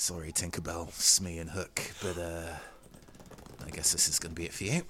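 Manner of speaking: audible mutter under the breath. A game character speaks to three others, muttered under his breath. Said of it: "so under his breath".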